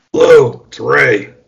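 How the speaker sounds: imitated gravelly voice. Retelling a late-night phone call from a friend: imitating a gravelly voice. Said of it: "I hear this gravelly voice".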